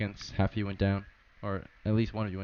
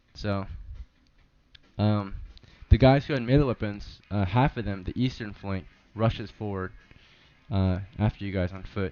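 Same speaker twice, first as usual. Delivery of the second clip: normal talking voice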